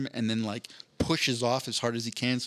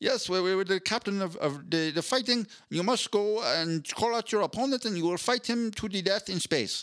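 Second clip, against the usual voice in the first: put-on Dutch accent, pitched up; 8 semitones higher than usual. Playing a head in a big mechanical body's stomach, in Bas Rutten's Dutch accent. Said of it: "he just speaks in his Dutch".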